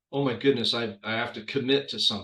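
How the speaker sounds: ordinary talk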